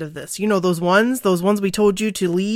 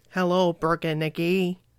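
robotic synthesized voice; 3 semitones lower, 6 dB quieter than usual. Podcast host showing how listener messages would sound in a computer voice. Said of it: "with that computer voice".

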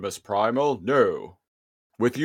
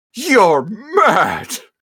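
overacted, dramatic, pitched-up delivery; 6 semitones higher than usual. Retelling what Optimus Primal says in the episode; overacted Optimus Primal line. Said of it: "I definitely, like, oversold it".

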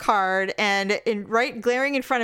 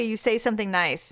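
normal talking voice

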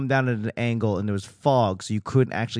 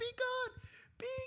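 put-on, very quiet, muted child's scream; 18 dB quieter than usual. Retelling a haunted house visit: imitating a child screaming. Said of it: "this kid screaming at the top of her lungs".

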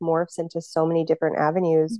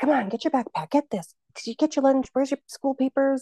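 chaotic, harried, hurried, high-pitched yelling; 8 semitones higher than usual. A parent recalls chaotic school mornings rushing the kids, retelling own yelling. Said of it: "like yelling and like".

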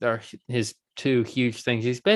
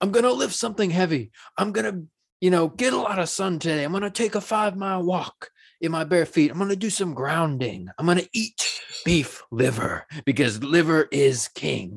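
excitable, enthusiastic, pumped-up voice, pitched up; 6 semitones higher than usual. Listing what an excitable, enthusiastic man says: imitating Liver King. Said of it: "and he's like".

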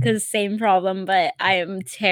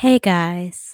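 soft-spoken, put-on gentle voice; 3 semitones lower, 3 dB louder than usual. Jokingly starting an outro to listeners in a put-on soft voice. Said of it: "I like doing, like, the soft voice".

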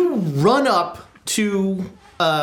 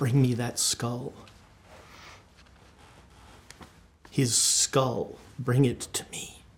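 low, secretive mutter under the breath; 6 semitones lower, 9 dB quieter than usual. Voicing Kingdon Ward to Archie during a listen roll, muttering under his breath. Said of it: "say under his voice to Archie".

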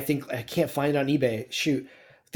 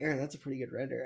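very quiet, mock-serious, put-on grave tone; 13 dB quieter than usual. Retelling what a friend said when walking past a render: imitating a friend, mock serious. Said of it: "in all seriousness".

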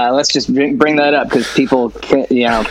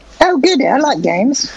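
very high put-on girly voice; 12 semitones higher than usual. Playing a girl answering a caller in a phone-call role-play, in a girly voice. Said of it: "Give me your best girl voice".

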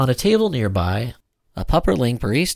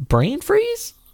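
unsure, hesitant, very high-pitched. Narrating fiction, a character questions a strange claim she's just heard: hesitant. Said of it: "Maddie hesitated".

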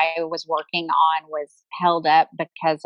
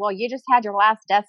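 ordinary talk, nothing marked

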